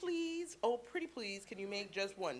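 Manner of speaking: said ever so sweetly. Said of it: "ever so sweetly".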